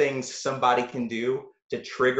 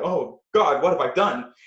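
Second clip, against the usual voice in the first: put-on panicked voice; 2 semitones higher than usual. Retelling snapping out of an impulsive act; acting out own past panic. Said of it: "I'm like".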